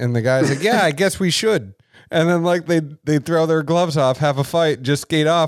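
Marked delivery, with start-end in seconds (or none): 0.6-1.7 terrible fake Canadian accent, high-pitched. Retelling two players agreeing to fight, in a terrible Canadian accent. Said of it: "forgive me for my terrible Canadian accent".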